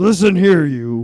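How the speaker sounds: loud gruff voice. Imitating the actor just praised for his gruff voice: Clancy Brown gruff voice. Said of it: "He's got that gruff voice".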